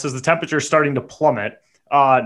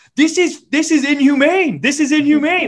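high-pitched yelling, said twice over; 11 semitones higher than usual. Retelling standing in the driveway before the neighborhood: retelling own yelling. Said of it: "yelling this".

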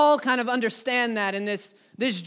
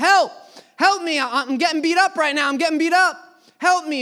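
frantic, desperate, high-pitched screaming; 5 semitones higher, 4 dB louder than usual. Recounting a dream, calling to friends in the other room, retelling a scream for help. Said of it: "I start screaming at them".

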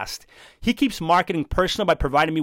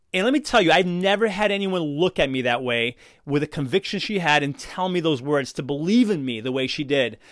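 ordinary delivery

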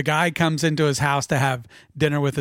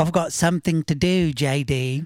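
put-on mock English accent. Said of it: "imitated an English accent like a couple of assholes".

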